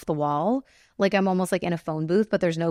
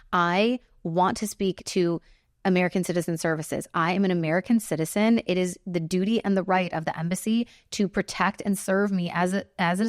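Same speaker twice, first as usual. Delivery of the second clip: ordinary talk, nothing marked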